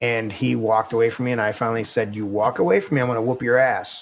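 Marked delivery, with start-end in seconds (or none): 2.1-4.0 put-on weighty, heavy, forceful tone. Retelling what the speaker told a grandson who walked away, retelling a weighty warning. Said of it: "said it with enough weight in my voice".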